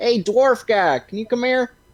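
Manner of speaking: high, loud call. Calling out across a store to a shopkeeper: calling out across a store. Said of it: "I call out to the whole store".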